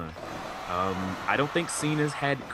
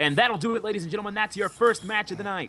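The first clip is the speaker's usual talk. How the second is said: fast, pitched-up wrestling ring announcer voice; 9 semitones higher, 3 dB louder than usual. Calling the end of a video game wrestling match: wrestling ring announcer voice. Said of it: "you do have a good voice for this".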